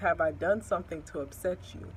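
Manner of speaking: usual speaking voice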